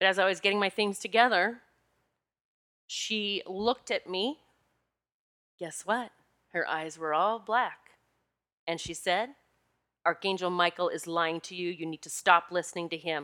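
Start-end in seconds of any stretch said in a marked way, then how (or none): 10.0-13.3 put-on severe, commanding, very stern tone. Speaker retelling what a woman told her during energy work, mock-stern voice. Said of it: "with a very stern voice".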